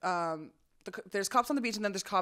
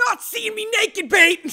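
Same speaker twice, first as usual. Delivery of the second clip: put-on drunken scream, higher and louder; 13 semitones higher, 12 dB louder than usual. Retelling yelling at a friend on the beach: imitating someone screaming. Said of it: "I was screaming at him".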